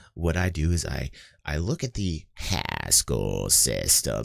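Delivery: low voice dropping into creaky vocal fry. Describing how Charles Hoskinson talks, then quoting him; Charles Hoskinson vocal fry impression. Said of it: "like this little vocal fry in the back when he talks".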